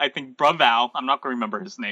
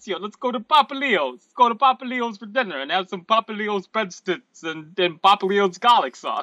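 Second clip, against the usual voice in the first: put-on Italian-accented voice; 8 semitones higher than usual. Improvising a restaurant bit, urging Ezio to dinner, in an Italian accent. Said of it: "that does the Italian accent".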